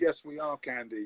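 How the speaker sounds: mock dry, expressionless deadpan, low and flat. Recounting to the listener how they answered Candy, retelling a deadpan reply. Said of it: "a deadpan".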